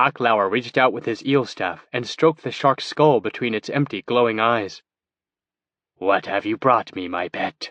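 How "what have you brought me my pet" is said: whispery wizard voice, lower pitch. Reading a story, the narrator voices the wizard speaking to his pet, whispery. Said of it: "he inquired in a whispery tone".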